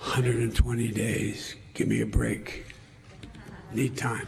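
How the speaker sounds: whispering. Answering reporters about undoing sanctions: whisper. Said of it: "He's whispering for ten minutes straight".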